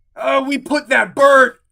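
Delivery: shrill, very loud, high-pitched dwarf shout. A game master voices a dwarf who shouts out as a player cuts him off. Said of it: "he shouts out".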